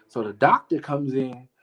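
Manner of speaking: ordinary talk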